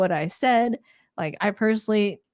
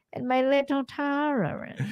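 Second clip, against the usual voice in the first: put-on cartoon lady voice, higher pitch; 6 semitones higher, 4 dB quieter than usual. Holding up a tiny shot glass: voice like the lady from The Incredibles. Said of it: "I sound like the, the, the lady from, uh, Invincibles".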